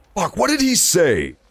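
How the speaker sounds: usual speaking voice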